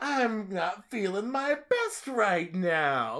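put-on distressed drunken voice. Describing a movie character's voice with a co-viewer, put-on distressed drunken voice. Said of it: "That's his emotional distress voice".

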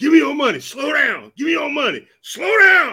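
high, loud, swooping screamed yell. Retelling how a man holding onto the truck screamed: imitating someone screaming. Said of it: "And he was screaming too".

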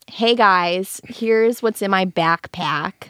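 put-on thick, heavy Chicago accent. Recalling old videos, the speaker imitates their younger self: strong Chicago accent. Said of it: "my Chicago accent was so strong".

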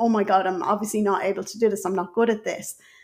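plain

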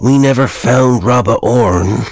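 grumbled, muttered aside. One of the mourners, edging nearer the fire, speaks, muttered. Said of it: "muttered one of the mourners".

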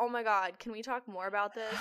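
ordinary delivery

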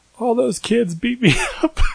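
tearful, very high, swooping sad sobbing. Retelling the answer to mom after being beaten up, retelling crying so sad. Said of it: "I was crying at the time, but I said it like probably so sad".

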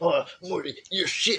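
slow, high cartoon scientist voice. Joking that after dying you wake up to Rick: Rick Sanchez voice. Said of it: "Rick's there like".

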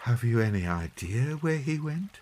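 gently spoken. After Teddy stops his story, Mother asks him gently. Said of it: "Mother asked gently".

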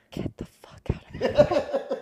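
close, intimate ASMR whispering. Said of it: "It's just me whispering".

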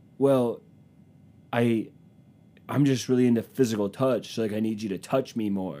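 put-on manipulative man's voice. Acting out a guy manipulating his girlfriend: imitating a manipulative guy. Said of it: "He talks like".

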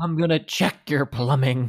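threatening tone. Delivering a plumber gimmick tagline, said like a threat. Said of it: "like it was a threat".

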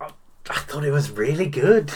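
embarrassed. Asked what they thought of No Time to Die, answering; embarrassed. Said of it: "You sound embarrassed to say that".

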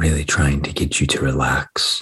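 deep, sultry, mysterious voice. Podcast host jokingly greeting listeners in the morning, deep, mysterious, sexy voice. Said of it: "deep, mysterious, sexy voice".

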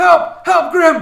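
loud, high-pitched yell.

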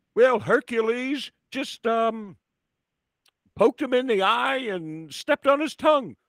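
put-on very high-pitched old man voice with Alabama accent. Acting out wrestling commentary, answering Jesse in the voice of Lord Alfred Hayes as an old Alabaman. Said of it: "sound like an old man from like Alabama".

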